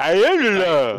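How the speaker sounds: loud, booming, slow, drawn-out delivery. Contrasting ways the character might say a line: Sylvester Stallone voice. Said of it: "like Sylvester Stallone".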